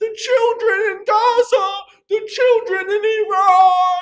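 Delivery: very high, very loud sneering shriek, "Iran" drawn out. Streamer addressing chat, doing a mocking Democrat impression. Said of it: "that's my that's my Democrat impression".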